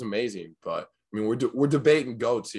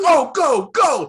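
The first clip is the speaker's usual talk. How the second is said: shrill, very loud, high-pitched cheering yell; 11 dB louder than usual. Retelling how dad yelled at the tv during games: imitating someone yelling. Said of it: "he'd start yelling at the T V".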